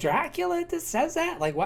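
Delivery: ordinary talk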